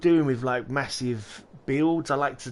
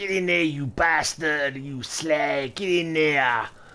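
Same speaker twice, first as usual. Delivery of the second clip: put-on Cockney accent; 3 semitones higher than usual. Speaker showing how he swears at something to make it work, put-on cockney accent. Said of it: "I like to swear it in Cockney".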